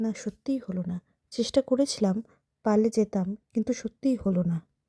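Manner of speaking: ordinary delivery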